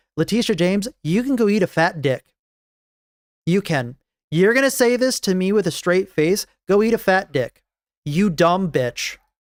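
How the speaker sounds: worked-up, angry, increasingly heated rant. Reacting to a lawsuit's claim about violent games: heated. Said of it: "I got a little heated over that".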